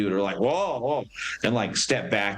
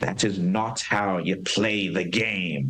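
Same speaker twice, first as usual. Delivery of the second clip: put-on German accent, growing upset and angry. Narrator voicing a man growing upset at how the game is played: upset german accent. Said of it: "He's getting a German accent as he gets more upset".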